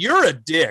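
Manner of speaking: ordinary talk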